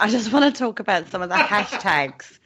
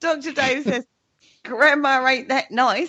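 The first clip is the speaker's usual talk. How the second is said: slow, poorly done, put-on West Country accent; 4 semitones higher than usual. Quoting Doctor Dave to the others: bad West Country accent. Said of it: "I don't think Doctor Dad's got that accent".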